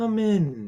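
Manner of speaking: soft, gentle voice. Voicing someone inside the longhouse answering a tap on the cloth, soft voice. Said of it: "And you hear this soft voice".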